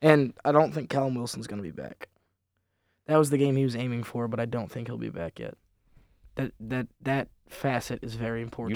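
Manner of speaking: sorrowful, downcast, sad, quiet tone. Discussing an upcoming football match with two others: very sad tone. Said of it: "You said that with a very sad tone".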